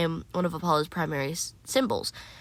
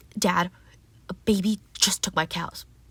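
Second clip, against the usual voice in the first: put-on complaining god voice. Acting out a skit, complaining to Dad that cows were stolen: Apollo voice. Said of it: "let me do a skit of this".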